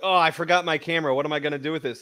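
plain

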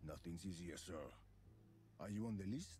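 put-on very quiet voice, possibly French accent. Replying to someone asking how to get in, in a vaguely French-sounding accent. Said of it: "That's not French, is it?".

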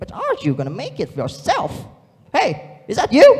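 very loud, high, joyful and playful voice. Speaker demonstrates a third character voice: playful, joyful voice. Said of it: "make it very playful and joyful".

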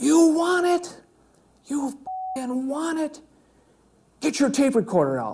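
high-pitched screaming. Recounting how a man brought into the room screamed at them, imitating someone screaming. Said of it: "he screamed at me".

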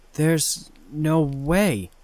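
stuttering. The narrator reacts to her brother appearing across the room, stuttering. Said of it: "I stuttered".

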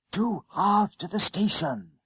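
soft and hushed. A boy speaks to a bus conductor, soft half-whisper. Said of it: "Jennings whispered softly".

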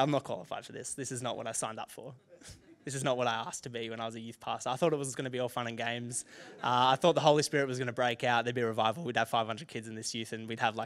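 ordinary talk

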